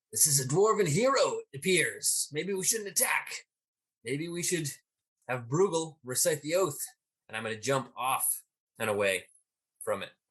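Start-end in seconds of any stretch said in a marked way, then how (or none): 0.1-6.8 high, raised yell in a character voice. Playing a character who calls a warning to the group: yelling in character to the group. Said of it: "I'm gonna yell out to the, to the group".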